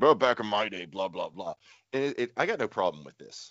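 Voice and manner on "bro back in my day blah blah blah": put-on cranky, complaining grumpy old man voice. Admitting he sounds like a grumpy old man, imitating a grumpy old man. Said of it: "I sound like the grumpy old man who's like".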